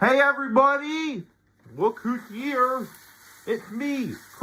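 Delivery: put-on puppet frog voice. Voicing a frog character greeting everybody: Kermit the Frog voice. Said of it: "Kermit the Frog here".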